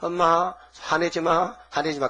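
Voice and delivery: put-on wheedling, coaxing, soothing little-kid voice. Acting out a child who upset the mother: imitating a child coaxing. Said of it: "그 달갭니다".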